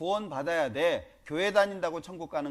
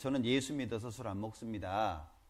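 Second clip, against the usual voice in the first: polite tone, much lower and quieter; 7 semitones lower, 6 dB quieter than usual. Retelling declining a drink in front of company executives, retelling a polite refusal. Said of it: "정중하게 말씀을 드렸더니".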